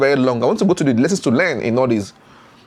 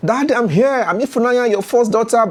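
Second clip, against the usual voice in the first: mock, high, calling-out scream; 8 semitones higher than usual. Retelling how a daughter called out to her father: imitating a scream. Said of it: "she screamed".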